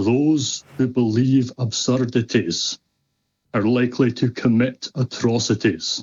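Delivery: ordinary delivery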